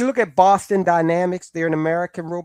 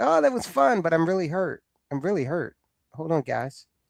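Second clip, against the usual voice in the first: forced cheer, laughing it off, hurt beneath; 4 dB quieter than usual. Voicing the CEO's thoughts after he kicked a robot: imitating a CEO playing off pain.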